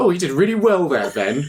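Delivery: acted snide, insincere, sarcastic praising tone. Showing how compliments sound to them: imitating a sarcastic compliment. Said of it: "That's how I receive compliments. Like".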